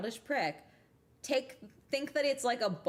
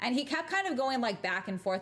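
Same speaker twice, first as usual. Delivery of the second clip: ordinary delivery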